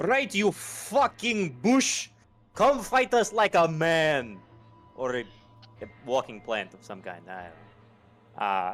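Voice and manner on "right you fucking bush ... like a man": shrill, very loud, high shouting. Voicing a character shouting a taunt upstairs at a creature: shouting a taunt upstairs. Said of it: "just shout back".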